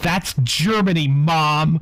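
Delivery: put-on self-assured know-it-all kid. Retelling a child correcting her mother about a flag; imitating a confident kid yelling. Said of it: "yelled at her mother".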